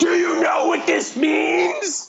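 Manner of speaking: shrieking, very high, drawn-out excited scream. Recounting grabbing someone by the shoulder and repeating a question, retelling a scream. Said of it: "just screaming like".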